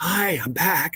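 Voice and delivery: hushed, soft half-whisper, barely audible. Retelling the caller phoning back in the night: imitating a woman half-whispering.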